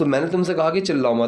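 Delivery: ordinary talk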